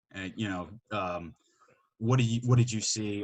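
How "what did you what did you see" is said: hushed, whispered voice. Voicing a character who questions someone in a crowd: whispering. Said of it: "he's kinda whispering".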